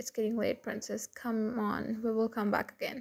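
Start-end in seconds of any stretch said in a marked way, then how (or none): none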